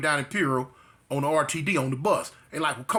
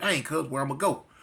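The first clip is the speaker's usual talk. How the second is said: ordinary talk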